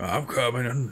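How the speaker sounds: put-on worn old man's smoker voice. An old man opening up late calls to the waiting customer in a smoker voice. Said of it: "He's got that smoker voice".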